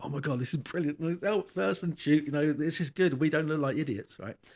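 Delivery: mock-excited gushing, excited man's chatter. Telling a story, the speaker quotes a man's reaction: imitating an excited man. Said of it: "He's all excited".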